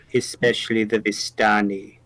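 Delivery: very low, soft, hushed murmur. Leaning forward, a character adds one more remark in a very low voice. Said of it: "A very low uh, voice, Ez is going to lean forward and say".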